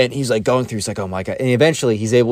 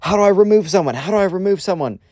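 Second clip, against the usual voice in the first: put-on panicked yell, higher; 9 semitones higher than usual. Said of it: "The teacher's just yelling at the class".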